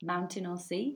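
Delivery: put-on English accent. Interviewer asking a quick-fire question, in a put-on English accent. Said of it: "That's my English accent going out".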